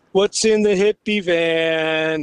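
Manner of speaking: acted drunk man voice, very slow and dragged. Retelling what a drunk man outside the van kept saying: imitating a drunk man. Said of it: "He's drunk".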